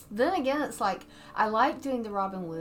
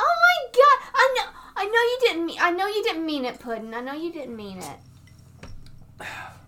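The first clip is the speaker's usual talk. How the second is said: very high, squeaky, animated voice with big swoops; 9 semitones higher, 8 dB louder than usual. Asked by the other host to show it off, the speaker does a Harley Quinn impression. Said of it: "you really want to hear my Harley Quinn impression".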